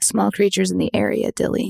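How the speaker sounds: hushed whisper. Voicing a character who leans in to tell Dilly something: whispering. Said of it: "And then she whispers".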